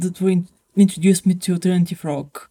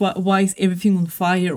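ordinary talk

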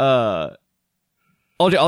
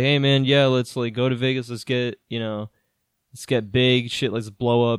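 ordinary delivery

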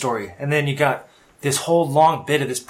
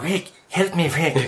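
pleading, stretched out slowly; 2 semitones higher than usual. Quoting a film line as an impression: Peter Lorre impression. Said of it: "who was the Peter Lorre".

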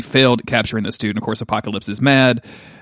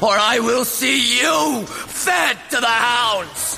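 put-on screamed, screeching yell; 12 semitones higher, 3 dB quieter than usual. Quoting a villain threatening to feed Caliban to the hounds, mimicking a screamed threat. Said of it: "he screams it out".

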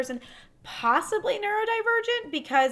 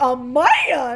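blurted exclamation in cartoon granny voice; 8 dB louder than usual. Retelling how the grandmother in an old cartoon chases the wolf: imitating the cartoon grandmother. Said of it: "her grandmother is, like, chasing the wolf and goes".

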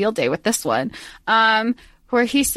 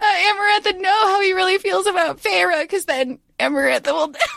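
very high-pitched, giggling through the whole line; 10 semitones higher than usual. Explaining a plot point about Amarantha while cracking up: laughing while talking. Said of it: "I can't say this with a straight face".

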